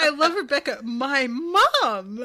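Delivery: very loud, disbelieving, incredulous outburst. Retelling a scene, imitating Rebecca's incredulous voice. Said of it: "with this incredulous voice".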